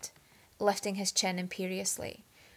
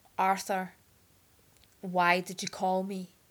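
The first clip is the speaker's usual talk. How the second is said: slow, through gritted teeth. Narrator reads a character's reply to the one who called him, slow, through gritted teeth. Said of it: "said very slowly through gritted teeth".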